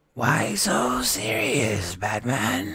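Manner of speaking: very slow, sing-song, swooping villain drawl. Showing chat a Heath Ledger Joker impression: Heath Ledger Joker impression. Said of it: "Here's my Heath Ledger Joker".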